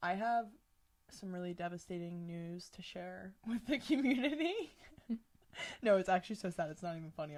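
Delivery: laughter breaking into speech. Announcing devastating news to the community, laughing while talking. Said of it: "I don't know why I'm laughing".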